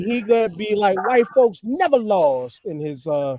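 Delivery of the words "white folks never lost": loud, high, swooping delivery. Imitating a governor denying history, in LaVar Ball's voice. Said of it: "in his, uh, in his, uh, Big Baller Brand voice".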